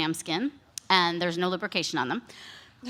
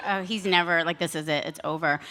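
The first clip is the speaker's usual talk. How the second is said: usual speaking voice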